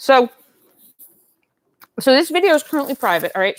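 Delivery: talking with mouth full. Chatting to viewers about dolls while eating: talking with mouth full. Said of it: "with my mouth full".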